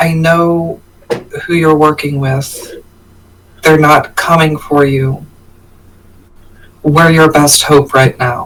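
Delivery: hushed, whispering voice. As Ember, sitting down and looking into her eyes, starting to whisper. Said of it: "and starts whispering".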